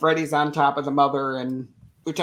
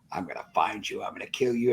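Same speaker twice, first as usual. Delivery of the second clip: creepy, breathy, hushed whisper; 6 semitones lower, 7 dB quieter than usual. Retelling a horror movie scene as the villain comes after a hiding girl, in creepy Freddy voice. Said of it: "And his that creepy Freddy voice".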